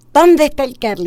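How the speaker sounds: tearful loud shout. Retelling her mother's phone call on Saturday evening; imitating mother crying, yelling. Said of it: "llorando me dice".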